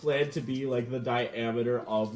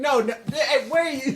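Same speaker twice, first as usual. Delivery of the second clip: very high, raised, beleaguered, harried cry; 13 semitones higher, 6 dB louder than usual. Voicing a character running after someone: beleaguered Bert voice. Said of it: "a very beleaguered Bert running after".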